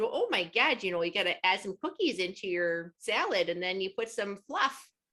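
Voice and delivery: put-on gushing, chatty Midwestern accent. Describing a TikTok creator who makes Minnesota salads, imitating her Midwestern accent. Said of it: "she talks just like that".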